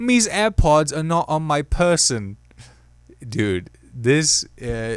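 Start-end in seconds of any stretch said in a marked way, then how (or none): 0.0-2.4 played-up fake British accent, pitched up. Speaker without airpods, trying to get into an accent: put-on british accent. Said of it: "This is the only way somehow I can get into a British accent".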